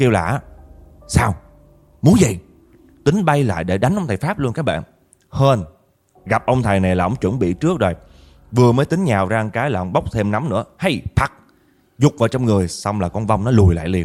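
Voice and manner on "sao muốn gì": angry, cursing ghost voice. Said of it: "Nó chửi ông thầy quá trời chửi luôn".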